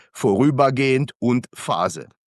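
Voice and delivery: vorübergehend and Phase stressed, spoken slowly and emphatically.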